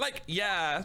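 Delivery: high put-on Valley Girl accent. A witness in a courtroom scene answers the lawyer: Valley Girl voice. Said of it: "Valley Girl".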